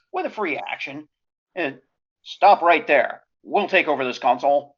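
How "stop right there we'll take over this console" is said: shouting at full volume. Player speaking as their character to take over the console: stormtrooper voice. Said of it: "in my best stormtrooper voice".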